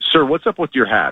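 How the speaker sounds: acted, confrontational, aggressive police officer voice. Retelling how a police officer questioned him about his hat: imitating an aggressive officer. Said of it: "approached me more aggressively and was like".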